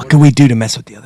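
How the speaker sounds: quiet, low, hushed voice. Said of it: "I'm talking low 'cause they can".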